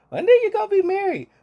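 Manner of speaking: very high, loud motherly lecturing voice. Quoting a Midwestern mother's advice in a put-on mom voice. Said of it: "that's the best mom voice I can do".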